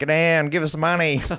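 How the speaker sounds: put-on broad Australian accent, commanding tone. Retelling robbers who barged in shouting their demands: yelling in broad australian accent. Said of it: "started yelling in broad Australian accents".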